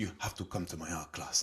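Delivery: bad, clumsy, put-on Russian accent. Retelling a date where a Russian art teacher invited him to class; bad Russian accent as Tatiana. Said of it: "That's a rubbish accent".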